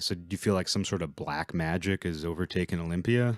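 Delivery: ordinary delivery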